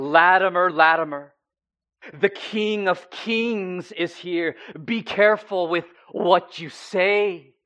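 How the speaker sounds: very loud, thundering, booming, "say" stretched. Retelling a man's warning called out to latimer, in a loud booming voice. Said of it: "he says with a loud and booming voice".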